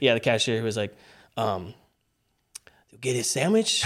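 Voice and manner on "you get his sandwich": put-on speech with a Spanish accent. Answering a request for an impression of the cashier: imitating the cashier with a Mexican Spanish accent. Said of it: "can you do an impression of the cashier?".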